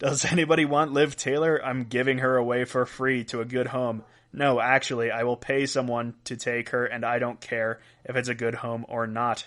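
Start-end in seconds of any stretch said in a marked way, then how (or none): none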